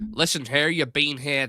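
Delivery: loud Northern Irish Belfast accent. Asked whether they were born in the UK, the speaker tries a Belfast accent. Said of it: "I'll give you my Belfast accent".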